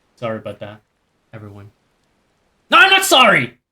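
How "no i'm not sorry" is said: very high, shrill, loud, worked-up angry outburst. Taking back an apology to viewers during the game: angry outburst. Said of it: "Being angry is my new brand!".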